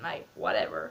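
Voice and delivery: very low-pitched, put-on American accent. British speaker showing how they sometimes talk, in an attempted American accent. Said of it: "an American accent".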